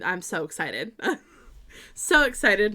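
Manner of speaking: purely sarcastic excitement, not meant. Talking about snow coming this weekend, sarcastic. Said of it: "Note the sarcasm".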